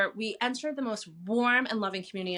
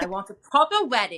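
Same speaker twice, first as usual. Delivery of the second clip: raised-pitch, attempted put-on South African accent; 5 dB louder than usual. Retelling what the speaker's mother told the father on their anniversary: attempted south african accent. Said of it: "she said in her South African accent".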